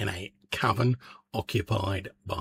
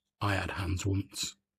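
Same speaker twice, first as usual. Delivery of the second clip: mournful, put-on, almost sad voice; 3 dB quieter than usual. Speaker describing what the blue-eyed one says when waved at, imitating a sad voice. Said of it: "in a almost like sad voice".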